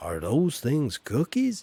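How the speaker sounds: bad, swooping put-on American accent. Imitating Americans asking about biscuits: bad American accent. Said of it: "Did you like my American accent there?".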